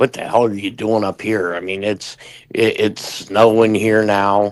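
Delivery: normal talking voice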